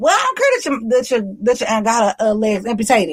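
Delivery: plain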